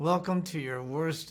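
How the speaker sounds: mimicked speech through a stiff, frozen jaw. Retelling a first scene shot in extreme cold, imitating talking with a frozen jaw.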